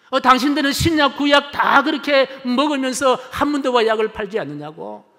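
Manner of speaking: furious outburst, high, loud angry shout. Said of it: "버럭 화를 내더랍니다".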